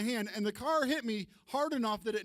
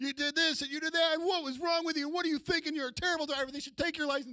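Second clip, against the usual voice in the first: mock angry rant, high-pitched, going off loudly; 5 semitones higher than usual. Retelling chewing out a driver who hit him: retelling yelling at a driver. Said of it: "I'm just going off at her".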